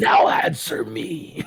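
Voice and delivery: harsh, deep, guttural bass voice. Voicing a character who speaks the harsh Abyssal tongue: deep guttural harsh voice. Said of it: "And then go back to Abyssal".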